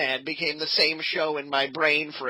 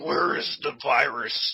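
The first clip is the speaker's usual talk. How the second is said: put-on superhero voice, pitched much lower; 2 semitones lower than usual. Showing how Batman differs from the more subdued Jensen, Batman impression. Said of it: "Batman's more like".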